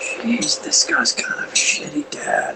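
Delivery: breathy stage whisper, pitched to be overheard. In character, an aside meant for the guys to overhear: half-whispered aside. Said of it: "like like like whispering, but also kind of not whispering".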